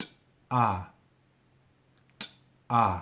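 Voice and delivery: very slow, each "t" and "ah" syllable set apart. Teaching a word's sounds, telling the learner to watch closely: slow pronunciation demonstration. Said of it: "Watch very closely".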